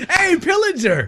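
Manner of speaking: cheery, high, slow laughing shout.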